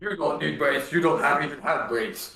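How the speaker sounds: put-on orc voice. A tabletop player talks to the group, doing an orc impression. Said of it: "That would be my orc impression".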